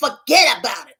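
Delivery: full, born New Yorker accent. A co-host breaks into talking like a New Yorker, with a New York accent. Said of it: "talk like a New Yorker".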